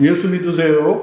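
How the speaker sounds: pretty, friendly, sweet and very kind voice. Showing one way people evangelize, very pretty, kind voice. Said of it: "아주 예쁜 목소리로 예? ... 아주 친절하게".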